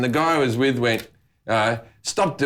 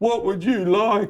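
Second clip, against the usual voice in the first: high-pitched, put-on mentally impaired voice; 8 semitones higher than usual. Retelling how a friend answered shop staff: put-on mentally challenged voice. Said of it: "put on a mentally challenged voice and go".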